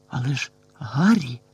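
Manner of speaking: faint, almost inaudible. A friend responds to the boy's rescue plan, barely audible. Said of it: "ледь чутно сказав Рон".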